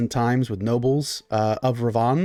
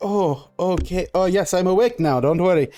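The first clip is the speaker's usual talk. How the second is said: high, drawn-out, unhurried aristocrat character voice; 5 semitones higher than usual. Voicing the Baron as his eyes close at the noise: voicing the Baron. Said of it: "The Baron kind of, like, does this, like, his, his eyes close, and he's like".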